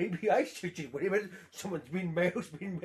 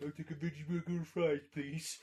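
soft, sarcastic, mocking voice; 3 semitones lower, 6 dB quieter than usual. Speaker mocks a companion's usual restaurant order, mocking voice. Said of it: "I just went in a mocking voice".

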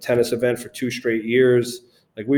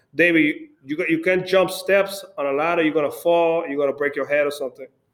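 thick put-on Spanish accent, higher; 4 semitones higher than usual. Quoting a man who warned the speaker, in a thick spanish accent. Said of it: "he's got a thick Spanish accent. So it sounded like".

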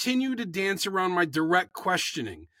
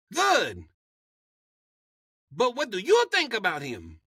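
swooping put-on Latin accent; 3 semitones higher than usual. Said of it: "this is my Latin accent".

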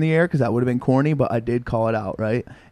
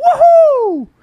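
put-on shrieked whoop, very high and very loud; 9 dB louder than usual. Retelling a friend's celebration jump, imitating his woohoo. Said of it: "Like that".

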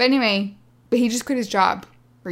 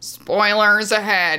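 flat, mechanical, machine-like robot voice; 4 dB louder than usual. Asked to sound authoritative, the speaker delivers a warning in a robot voice. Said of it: "I'm trying to sound like a robot".

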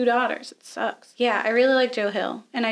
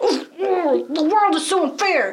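mock angry huffing, higher and louder; 6 semitones higher, 5 dB louder than usual. Mocking an actor's performance in a film: imitating Daniel Radcliffe huffing and puffing. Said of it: "huffing and puffing".

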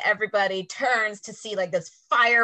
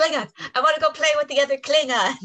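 put-on high, pitched-up childlike voice; 6 semitones higher than usual. Retelling a scene where Worf asks the captain to come along: childlike Worf voice. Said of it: "if Worf had sounded like a child".

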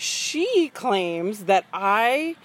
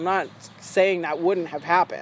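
ordinary talk

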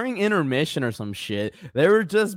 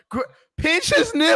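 high, hollered yell with a false start; 12 semitones higher, 3 dB louder than usual. Retelling yelling advice at a wrestler: imitating a yell. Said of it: "me and I just yelled".

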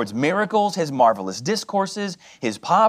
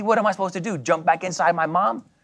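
normal talking voice

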